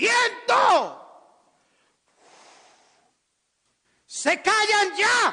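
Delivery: shrill, very high, loud, trumpet-like commanding voice. Preaching, retelling how the master stood up and ordered the wind; acting out a commanding voice. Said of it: "voz de mando, voz de trompeta".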